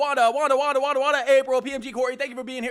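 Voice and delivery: rapid auctioneer-style talk. Greeting chat viewers by name like a seller: fast auctioneer patter. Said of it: "Let me try and do it like those guys that are selling".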